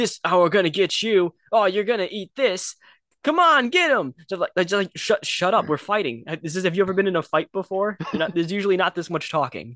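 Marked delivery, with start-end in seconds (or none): 0.0-4.1 loud, jeering, goading trash-talk tone. Complaining about talkative video game enemies, imitating enemies taunting. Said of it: "the enemies are talking while they're putting you down".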